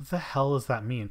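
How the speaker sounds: plain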